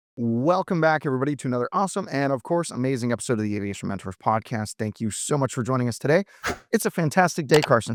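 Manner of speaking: fast, rushed, eager rattled-off delivery. Podcast host welcoming listeners back and greeting a co-host, speaking fast. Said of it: "I could tell you're speaking real fast".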